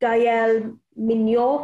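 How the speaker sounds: name said with French accent, French pronunciation. Saying a French player's name the French way: French accent on the name. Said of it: "Great accent".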